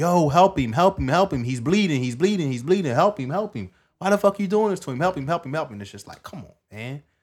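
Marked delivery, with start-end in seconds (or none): 0.0-5.8 acted, high-pitched screaming, same cry repeated. Describing police on top of a kid, imitating a man screaming. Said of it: "he's screaming like".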